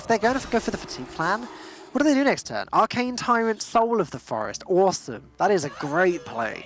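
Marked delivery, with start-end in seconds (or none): 4.7-6.7 sarcastic, ironic tone. Commenting on a play in the game, sounding sarcastic. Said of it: "Something tells me you don't think it's a great play".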